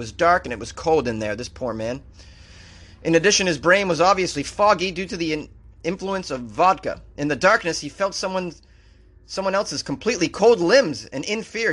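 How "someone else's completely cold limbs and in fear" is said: normal talking voice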